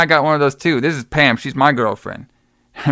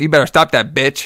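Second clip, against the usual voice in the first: angry, fed-up, pissed-off, threatening tone. Retelling a horror movie scene where Damon gets angry: imitating Damon angry. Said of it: "he gets all pissed".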